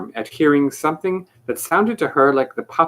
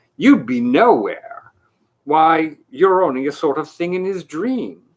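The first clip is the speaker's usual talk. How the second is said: contemptuous, scornful delivery. Reading a story aloud, voicing a character's retort: contemptuous retort. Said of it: "retorted contemptuously".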